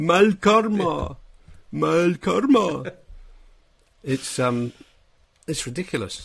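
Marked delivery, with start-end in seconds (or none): 0.0-2.9 very slow, cartoonish, high, drawn-out dubbed voice. Showing how Neil's Catalan dubbing sounds to make people laugh: cartoony Catalan-dubbed Neil voice. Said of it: "I have to talk in this completely different cartoony voice".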